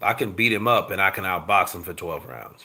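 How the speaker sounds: ordinary delivery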